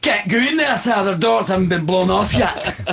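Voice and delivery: very high-pitched put-on Scottish soldier accent. Joking about accents for Lord Vader's troops, Scottish stormtrooper voice. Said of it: "Or one Scottish stormtrooper".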